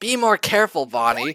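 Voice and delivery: loud yelling. Acting out a scene, yelling at Bonnie after a reckless strike: yelling. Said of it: "you can't help but yell".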